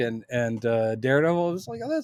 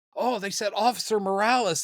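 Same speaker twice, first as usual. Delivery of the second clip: put-on high, eager, excited, worked-up fan voice; 6 semitones higher than usual. Recounting how fans reacted to a character's name, imitating excited fans. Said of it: "people got real excited".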